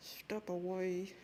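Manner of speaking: mock-angry, speaking through clenched teeth. Showing the only way to sound angry: through gritted teeth. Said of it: "speak through your teeth".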